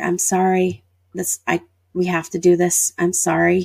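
usual speaking voice

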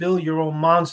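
usual speaking voice

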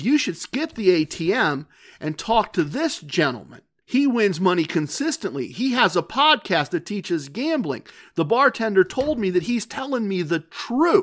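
normal talking voice

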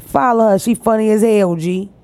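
put-on Chicago-style accent. Retelling what a woman said on Instagram to send her fans over; Chicago accent. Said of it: "In a Chicago accent".

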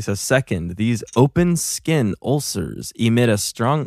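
very slow, deliberately drawn-out delivery. Reading a passage aloud to friends, speaking really slowly. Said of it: "I'm gonna do it really slowly".

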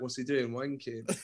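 very low, very quiet under-the-breath mutter. Retelling what Julian said beside the perspex glass: muttered under his breath. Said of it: "just under his breath".

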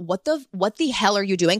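normal talking voice

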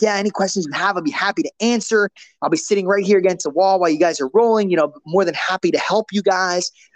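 eager, upbeat, super enthusiastic, energetic tone. Retelling an offer of help to a class: imitating own enthusiastic, energetic delivery. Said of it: "super enthusiastic and energetic".

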